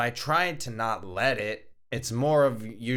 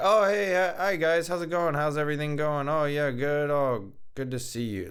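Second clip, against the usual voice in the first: bright, pitched-up, fake-cheerful voice; 5 semitones higher than usual. Imitating own past greeting to customers after a terrible day: put-on cheerful greeting. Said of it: "just put on that face".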